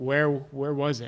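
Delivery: meek, timid, faltering, hesitant voice. Voicing a character in the scene, timid voice. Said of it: "in like a really timid voice".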